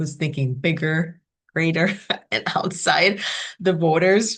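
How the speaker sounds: laughing through the words while speaking.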